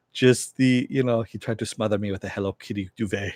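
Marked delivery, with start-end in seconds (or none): 1.2-3.3 said really fast and quieter. Retelling a show scene's funny line, imitating Frenchie saying it really fast. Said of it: "He says it really, really fast".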